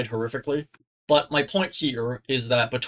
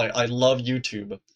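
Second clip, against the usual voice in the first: sarcastic, ironic delivery. Complaining about being demonetized right after monetization: sarcastic. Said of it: "This is sarcasm".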